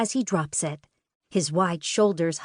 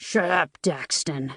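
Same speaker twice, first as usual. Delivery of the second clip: gruff, annoyed delivery; 3 semitones lower than usual. Narrator reading Dario telling his twin Daxton to shut up, gruff voice. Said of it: "Dario says in a gruff voice".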